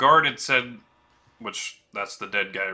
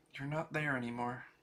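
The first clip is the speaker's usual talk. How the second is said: barely audible, soft half-whisper; 4 semitones higher, 14 dB quieter than usual. A woman in the game speaks into a player's ear, half-whispering. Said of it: "she whispers into your ear".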